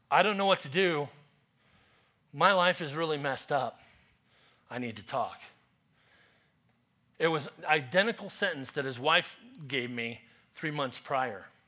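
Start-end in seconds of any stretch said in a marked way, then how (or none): 0.1-5.3 mock-trembling, shaky voice. Retelling what a caller said on the phone, imitating a shaky voice. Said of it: "his voice was shaky".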